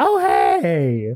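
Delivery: exaggerated, over-the-top camp effeminate voice. Describing stereotyped characters, in an over-the-top effeminate voice. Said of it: "You have to have an effeminate guy who's way over the top".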